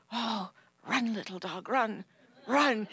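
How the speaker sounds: slow, private urging, half to himself. Retelling what he said while watching, retelling muttering under his breath. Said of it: "I could hear him under his breath going".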